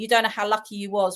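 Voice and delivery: ordinary talk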